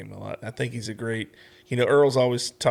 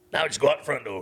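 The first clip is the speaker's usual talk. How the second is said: put-on Louisiana accent, coach-like voice; 3 semitones higher than usual. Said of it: "I'm gonna do the voice 'cause I love the voice".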